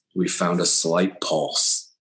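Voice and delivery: slow, hushed whisper under the breath. Retelling what the doctor told the family: retelling a whisper. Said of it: "he whispered".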